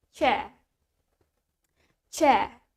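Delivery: low British accent with the r sound dropped. Leading learners in pronunciation practice, starting with the british version, british accent. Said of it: "starting from the British one".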